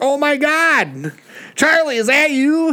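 mock very high, stretched-out, drawn-out hollering. Retelling a woman filming a boat crash, imitating her hollering at the racer. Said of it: "So she's like hollering at".

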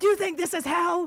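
put-on half-hearted, high, mild yelling. Retelling how a landlord reacted to a complaint: imitating someone screaming. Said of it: "he started screaming".

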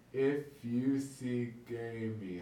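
very slow, drawn-out delivery with each word stretched. Showing how the phrase sounds when you say it really slow; very slow. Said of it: "if you say it really slow".

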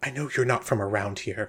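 half-whispered, confiding tone. Voicing a nervous character confiding a suspicion: half-whispering. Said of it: "and she starts sort of whispering".

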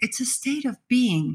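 being emphasized and held.

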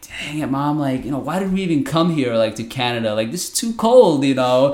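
play-acted upset, high-pitched yelling outburst. Recalling a long cold wait for the bus with mom, retelling an upset yell. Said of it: "I remember just yelling".

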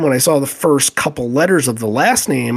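ordinary talk, nothing marked

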